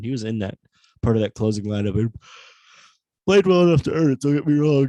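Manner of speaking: loud speech broken by yawns. At twelve thirty at night, discussing a player's game, yawning while talking. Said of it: "sorry, I keep yawning".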